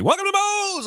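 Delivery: mock shrill, high, loud shout. Retelling how restaurant staff shout a greeting when the speaker walks in. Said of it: "they shout at me".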